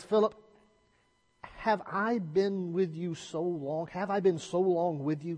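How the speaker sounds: play-acted fed-up, reproachful exasperation, pitched high. Quoting Jesus's reply to Philip, retelling Jesus's exasperation. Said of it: "Can you hear the exasperation in the voice of Jesus".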